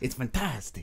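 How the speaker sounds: horrible, unconvincing put-on Mexican accent. Joking about a nickname, trying a horrible Mexican accent. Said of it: "my horrible Mexican accent".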